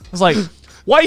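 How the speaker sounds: plain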